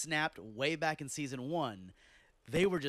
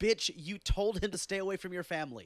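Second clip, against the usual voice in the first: exasperated scolding, yelling tone, voice pitched up; 5 semitones higher than usual. Retelling watching a show and yelling at a character on TV, retelling own yelling at TV. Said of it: "I start yelling at the TV going".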